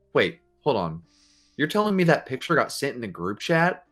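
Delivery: put-on shocked innocence, fake surprise. Retelling pretending to a teacher not to know: retelling fake surprised acting. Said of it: "my best, like, [name] on demand character acting".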